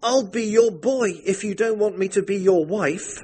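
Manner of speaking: high, begging, imploring, pleading tone. The narrator speaks to her husband when he reappears, pleading. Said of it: "I pleaded".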